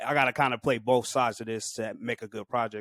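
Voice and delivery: ordinary talk, nothing marked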